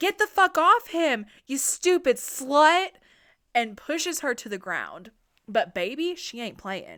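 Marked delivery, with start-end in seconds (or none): 0.0-2.9 very loud, high, enraged furious yell. Retelling a woman yelling at another woman sitting on a man's lap; retelling a yell.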